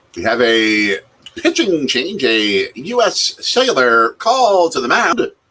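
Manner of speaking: loud, drawn-out swooping call, stretched and swinging. Calling a pitching change while watching a game: Bob Uecker voice. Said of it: "My Bob Uecker voice".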